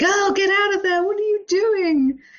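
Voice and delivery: shrill, very high, acted-out shouting. Imagining viewers reacting to a show: imitating yelling at the screen. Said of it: "We'd all be yelling at the screen going".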